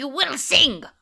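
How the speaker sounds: imitated thick Russian accent. Retelling a penguin character's line in a thick russian accent. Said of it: "she's got a really thick Russian accent".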